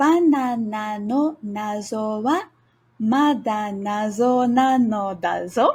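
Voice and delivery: slow, unhurried speech. Teaching a Japanese phrase, saying it the first of two times: slowly. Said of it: "Slowly first".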